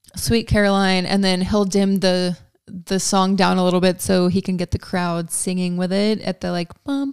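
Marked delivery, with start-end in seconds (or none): none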